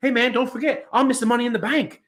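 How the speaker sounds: put-on Australian accent. Acting out someone who lost coming out the next week, in a put-on Australian accent. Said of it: "That was a good accent".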